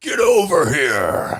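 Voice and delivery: loud, high fighting-game style shout. Asked for his best impression from a fighting game, doing a Scorpion impression. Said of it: "your best impression of Scorpion from Mortal Kombat".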